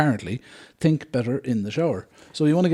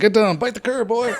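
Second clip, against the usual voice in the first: daft, stupid, put-on Cockney accent; 8 semitones higher than usual. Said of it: "with that stupid Cockney accent".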